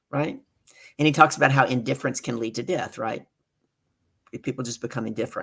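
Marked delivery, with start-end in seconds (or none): none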